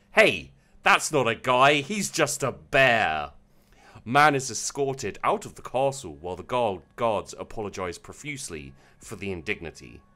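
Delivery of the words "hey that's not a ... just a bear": loud, slow, booming shout, bear drawn out. Retelling how a game guest saw through the disguise: imitating a loud shout. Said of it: "He shouts out very loud".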